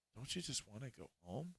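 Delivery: coaxing, seductive, very quiet half-whisper. Describing how Mother Anastasia seduces Torben, in her half-whispery voice. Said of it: "in this whispery voice".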